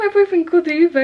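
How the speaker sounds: talking through laughter. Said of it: "I'm just laughing".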